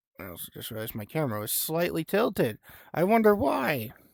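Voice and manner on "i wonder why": voice breaking and cracking, pitched high. Noticing the camera was tilted and wondering aloud, with a voice crack. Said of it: "Nice voice crack from me".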